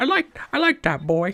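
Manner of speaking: put-on very high old peasant woman voice. Voicing a crowd member before the party goes inside: old peasant lady voice. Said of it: "an old, old peasant lady's like".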